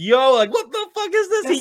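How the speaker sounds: very high, swooping, drawn-out, rising screaming yell. Retelling reading a manga panel, screaming at the phone: retelling own screaming. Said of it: "I was screaming at my phone".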